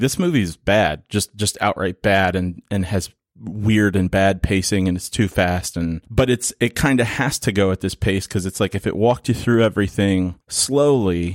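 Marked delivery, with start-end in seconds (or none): none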